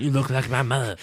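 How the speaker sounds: put-on cartoonish kid voice. Retelling what Dante says to the woman he saves, in a Cartman-esque voice. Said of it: "It's very Cartman-esque".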